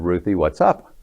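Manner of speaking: ordinary talk, nothing marked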